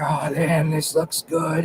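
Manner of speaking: whispered words. Retelling filming at the base of a tree: retelling own whisper. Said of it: "I'm whispering into the, the camera".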